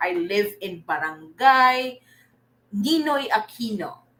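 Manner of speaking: ordinary talk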